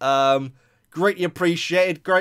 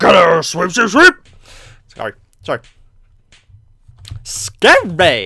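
loud, big, swooping, sing-song cartoon character voice; 7 dB louder than usual. A gamer sweeping in a game, doing a Mei from Overwatch impression. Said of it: "that's my impression of Mei from Overwatch".

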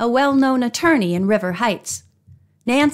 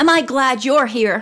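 happy, joyful exclaiming voice. Opening her apartment door to her niece and friends, an aunt exclaims happily. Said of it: "Eloise Drew exclaimed happily".

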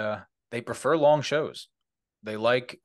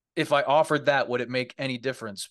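usual speaking voice

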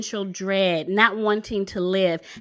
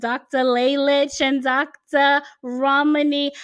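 slow, put-on New York Italian woman's accent; 4 semitones higher, 3 dB louder than usual. A speaker introduces two doctors by name to listeners, in a New York Italian woman accent. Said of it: "I start speaking like a New York Italian woman".

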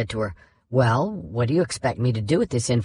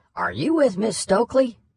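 very high, drawling southern drawl; 10 semitones higher than usual. Recounting a judge's phone call to her, quoting his question: imitating Dupree's southern drawl. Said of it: "doing her best impression of Dupree's southern drawl".

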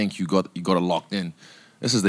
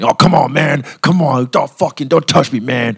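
very loud, high, aggrieved whine; 7 semitones higher, 9 dB louder than usual. Imitating a fighter who got a taste of his own medicine: imitating a fighter complaining. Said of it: "I do a real good impression of him".

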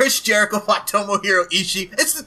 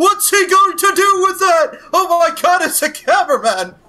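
slow, loud delivery with every line rising in pitch; 9 semitones higher, 6 dB louder than usual. Retelling a wrestling show's camera reaction, upward inflection: Tony Schiavone commentary voice. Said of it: "was like Tony Schiavone in W C W".

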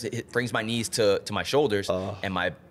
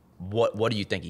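put-on angry, mad ranting voice. Retelling a doctor scolding a patient: imitating an angry doctor. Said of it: "He's pissed".

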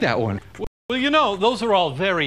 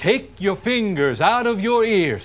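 usual speaking voice

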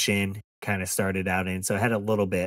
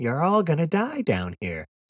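put-on British girl voice, much higher; 8 semitones higher, 3 dB louder than usual. Recalling a film, the speaker quotes the British girl AI, imitating a British girl. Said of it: "the British girl who's like the red lady".

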